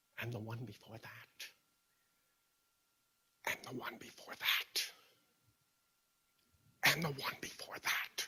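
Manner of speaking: barely voiced, very hushed whisper. Speaker repeating the same phrase over and over, whispering.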